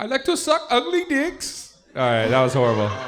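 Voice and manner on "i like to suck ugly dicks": bad, very high-pitched put-on Indian accent. After asking to try an accent, the speaker delivers this in an indian accent. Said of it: "Can I try an Indian accent?".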